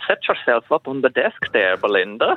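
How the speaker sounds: put-on Dutch accent. Asked how Dr. Robbins would sound, voicing him: Dr. Robbins Dutch accent. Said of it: "let's try your accent then".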